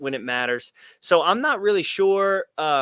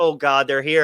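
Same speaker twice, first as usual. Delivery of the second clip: put-on dismayed voice. Retelling how a dismayed door worker reacted to the team walking in: imitating a dismayed door worker. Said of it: "the poor girl working the door, she just turns it back. She goes".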